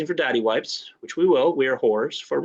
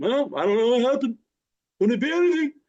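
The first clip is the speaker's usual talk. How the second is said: high, politician-style put-on voice; 10 semitones higher than usual. Acting out a made-up reply to a question: Bernie voice. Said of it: "that's a Bernie voice".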